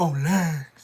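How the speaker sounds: loud, huffing, out-of-breath put-on heavy breathing. Imitating how someone says a phrase: imitating Lurch breathing hard.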